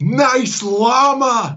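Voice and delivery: shrill, very high shout with "llama" drawn out. Retelling a passenger shouting from a car window: imitating someone shouting. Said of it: "the passenger leant out of the car window and shouted".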